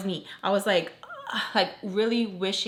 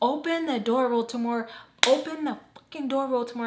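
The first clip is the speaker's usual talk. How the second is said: mock-angry, furious yell, pitched higher; 4 semitones higher than usual. Retelling a woman banging on a door, imitating Sam yelling angrily. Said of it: "Sam is like pissed".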